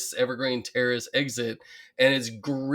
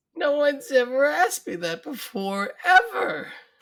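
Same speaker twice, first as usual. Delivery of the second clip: put-on, very high, slow, emotion-choked voice. Quoting Marge as she chokes up: imitating Marge choking up. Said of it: "And then she chokes up and says".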